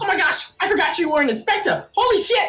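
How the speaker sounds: alarmed, startled outburst, pitched way up. Voicing a character who jumps up and snatches a pipe: startled character exclaiming. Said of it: "jumps up very, very, like, ferociously and snatches it from you, uh, and goes".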